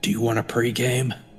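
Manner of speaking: whispering in a put-on voice. Leaving the room and asking another character a quiet question: whispering in character. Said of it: "I'm gonna whisper to Pep".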